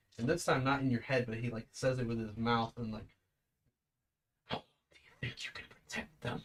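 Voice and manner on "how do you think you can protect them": snarled in a hushed, breathy whisper. Narrating a game, a character leaps up behind the player and speaks, snarling. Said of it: "you can hear him snarling".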